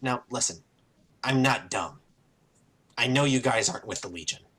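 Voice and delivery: speaking in a whisper. Character closes the door behind the group and speaks to them in a whisper. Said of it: "And in a whisper".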